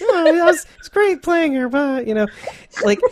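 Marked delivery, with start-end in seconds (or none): 0.0-2.1 very high, nonchalant, light brush-off tone. Imitating an actress answering a fan question: imitating Kim Dickens. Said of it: "I'm trying to sound like her a little bit".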